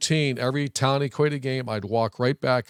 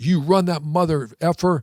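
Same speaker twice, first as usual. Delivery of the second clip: put-on raw, loud screaming; 4 semitones higher, 3 dB louder than usual. Retelling the offensive line screaming at him, imitating linemen screaming. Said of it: "standing up screaming at me".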